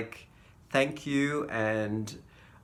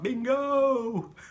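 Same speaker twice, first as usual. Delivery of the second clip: mock very high, long, drawn-out excited shout; 10 semitones higher than usual. Retelling finishing a bingo card: imitating own shout. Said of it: "I shouted out".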